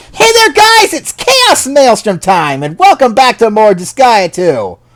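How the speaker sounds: forced, fake-upbeat, very high-pitched, loud cheer. Showing viewers how his usual video intro sounds: forced cheerful energetic voice. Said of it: "that was extremely forced. I wasn't feeling energetic or happy like usual".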